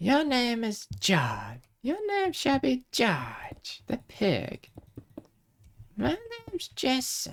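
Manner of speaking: very high voice, swooping wildly around. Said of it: "start doing the Jason the Egg voice".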